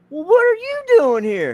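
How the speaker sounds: loud, high, long, swooping Texas drawl. Speaker retells Kenny's reply to being asked why he's there, Hank Hill Texas drawl. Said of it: "with this long Hank Hill, Texas Southern drawl accent".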